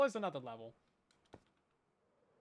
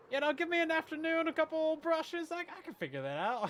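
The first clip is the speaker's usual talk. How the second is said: high, cocky tone, put on mockingly. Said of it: "being like".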